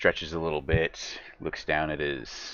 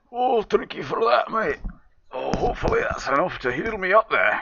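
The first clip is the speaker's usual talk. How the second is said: muffled, very high, raised voice; 7 dB louder than usual. A game master voices bandaged Baugity as the healing potions arrive: Baugity's muffled voice. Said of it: "Kind of muffled due to the bandages".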